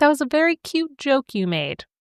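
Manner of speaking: playful, sassy joking tone. Retelling a scene in which Samantha teases her husband, imitating Samantha's sassy joking tone. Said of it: "sassy, joking laugh".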